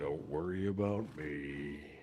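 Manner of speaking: extra monotone, low, flat, zero enthusiasm. Suggesting voices to try, the speaker acts out a bit in a monotone Eeyore voice. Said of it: "even more of a monotone, unenthusiastic".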